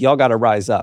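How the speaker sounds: ordinary delivery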